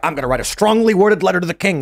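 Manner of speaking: ordinary talk, nothing marked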